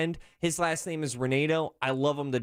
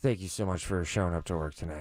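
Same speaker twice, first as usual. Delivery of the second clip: lower-pitched put-on drunk voice; 10 semitones lower than usual. Acting out own habit of thanking workers when hammered: imitating own drunk self. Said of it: "whenever I'm pretty hammered".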